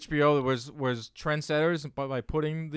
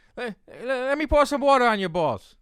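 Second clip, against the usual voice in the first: shrill, squeaky, very high translator voice; 9 semitones higher, 4 dB louder than usual. Trying your impression from a much-watched clip one more time, imitating a translator from a clip. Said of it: "Let me try it one more time".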